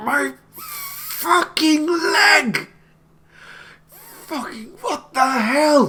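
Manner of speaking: strained, very high scream through clenched teeth. Voicing a figure sprawled under fallen brick, screaming through gritted teeth. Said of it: "just screaming through gritted teeth".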